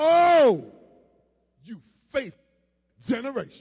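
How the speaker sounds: very loud, anguished, grief-stricken cry. A speaker acts out Jesus addressing the faithless generation, Jesus, with pain in his soul. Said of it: "Can you say it like you got a pain in your soul?".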